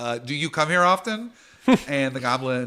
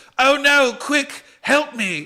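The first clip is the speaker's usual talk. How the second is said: frightened goblin voice, higher and louder; 14 semitones higher, 7 dB louder than usual. Voicing a goblin as bees burst in: scared goblin voice. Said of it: "looks scared, and the goblin says".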